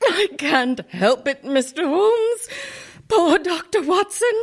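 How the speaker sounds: crying with laughter. A woman answers a man asking if she is crying, crying with laughter. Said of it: "it wasn't that funny".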